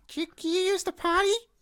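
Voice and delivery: put-on very high, squeaky, childlike puppet voice. After saying he has watched lots of Sesame Street, the speaker does an Elmo voice.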